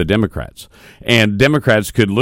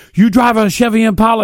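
put-on shrill yell, very high and loud; 14 semitones higher, 4 dB louder than usual. Retelling a man shouting through the building toward the manager's office, act out his louder yell. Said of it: "I can hear it get louder".

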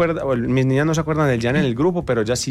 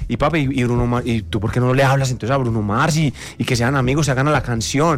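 plain

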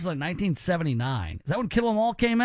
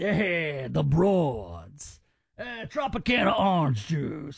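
slow, earnest, unironic drawl with "broads" drawn out; 3 semitones lower than usual. Comparing the man you are quoting to a legend, do a Robert Loggia impression. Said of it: "it would be Robert Loggia".

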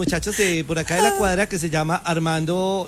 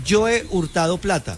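ordinary delivery

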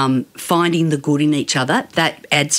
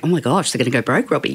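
mock joking tone, much faster. Acting out a joking reply someone would give, retelling a joking remark. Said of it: "And jokingly would say".

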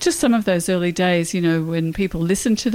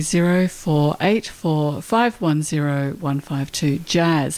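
said much slower, at a slow pace; 3 semitones lower than usual. Radio host repeating a text-in number for listeners, said again slowly. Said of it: "I'll say it again slowly".

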